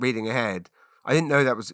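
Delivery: ordinary delivery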